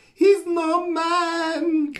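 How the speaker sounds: very high, strained, panicked cry. Retelling a story, the speaker acts out the last words heard on the radio, imitating a strained, panicked voice. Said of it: "in a really kind of strained voice, you know, like panicked voice".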